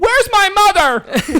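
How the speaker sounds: put-on very high, loud, girly shriek. Retelling a scene, mimicking Clark's girly voice. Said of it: "hear Clark have a girly voice".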